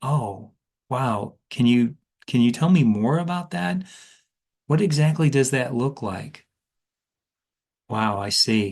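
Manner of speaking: sounding curious and inquisitive. Demonstrating how to ask good fact-finding questions on the phone, in a curious tone. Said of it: "adapt a curious tone".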